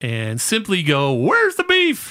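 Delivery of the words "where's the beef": badly squeaked out, very high. Explaining an old Wendy's commercial, doing a bad Where's the Beef lady impression. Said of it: "That was a terrible "Where's the Beef" lady impersonation".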